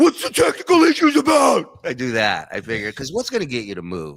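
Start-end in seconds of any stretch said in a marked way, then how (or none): 0.0-1.8 furious, very loud, high-pitched angry yell. Showing the voice used when mad at the staff: angry voice at staff. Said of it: "That's the voice I use".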